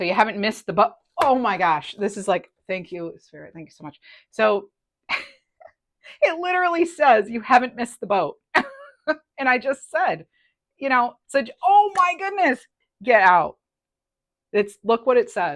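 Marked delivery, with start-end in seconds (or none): 11.6-15.6 loud, swooping, thrilled excited yell. Reading a message aloud, the speaker freaks out: excited yelling. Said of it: "sorry I yelled".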